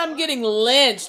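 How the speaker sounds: ordinary talk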